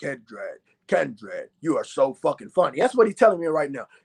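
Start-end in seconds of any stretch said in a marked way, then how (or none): 0.0-2.8 very low, deep, godlike voice. Speaker acts out God talking to him, God in Morgan Freeman voice.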